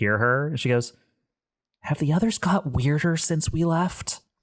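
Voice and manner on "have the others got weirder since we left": high, secretive, conspiratorial half-whisper. Voicing a character who glances around the bridge, then half-whispering. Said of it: "whispers so only you can hear".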